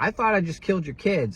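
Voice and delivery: acted-out full yelling outburst, high-pitched. Retelling what he yelled at the kids' dad during the fiasco; retelling a yell. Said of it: "I'm yelling at him like".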